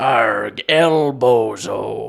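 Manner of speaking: booming, very loud, put-on pirate accent. Retelling what gets said in-game when someone dies: pirate accent. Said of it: "saying modern slang in a pirate accent".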